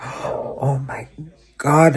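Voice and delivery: mock panicked speech. Retelling the therapist calling about a missed appointment: retelling own panic. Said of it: "and I panicked".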